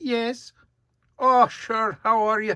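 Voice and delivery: very high, put-on Scottish woman's accent. Speaker trying an accent to voice a woman, attempted Scottish woman accent. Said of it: "I'll make her Scottish".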